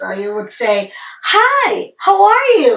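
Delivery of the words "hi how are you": delighted, very drawn-out, slow, swooping voice. Showing how to greet someone you haven't met in a long time: happy greeting. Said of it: "this is how you're going to change your voice".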